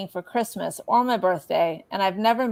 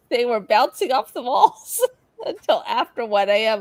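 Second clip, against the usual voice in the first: words broken up by laughter; 3 semitones higher than usual. Telling about the last time watching another couple's kids: laughing while talking. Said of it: "I don't know why I'm laughing".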